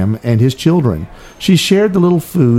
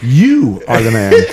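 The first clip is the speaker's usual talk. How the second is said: strong stress placed on the word "you". Quoting the prophet Nathan's line, with stress on the word you. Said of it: "we'll stress the word you".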